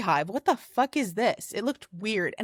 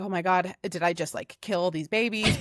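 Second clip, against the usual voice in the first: put-on panicked voice, lower; 4 semitones lower than usual. Retelling a moment of fear after disturbing bees: retelling own panicked words. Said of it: "So then I'm freaking out".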